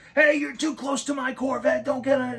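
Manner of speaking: shrill, screeching scream pitched very high. Retelling how a woman came out of her house yelling at him, imitating her screaming. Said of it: "she came out of that house screaming".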